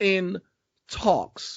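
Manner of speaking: stress on in talks. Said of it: "I need to stress that word".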